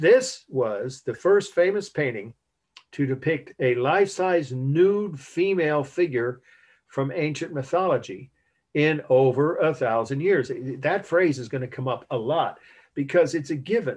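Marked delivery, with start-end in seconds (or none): 0.0-10.5 slow, measured, careful, deliberate delivery. A teacher giving the class a key phrase says it slowly. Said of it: "So I'll say it slowly and repeat it".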